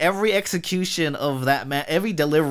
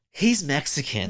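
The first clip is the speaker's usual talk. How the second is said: put-on, mock-disgusted tone. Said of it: "you made it sound like she was disgusted".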